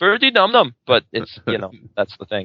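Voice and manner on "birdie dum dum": very high-pitched put-on Indian accent. Asked by another speaker to do an Indian accent: Peter Sellers' put-on Indian accent. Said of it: "me impersonating Peter Sellers, impersonating an, uh, Indian man".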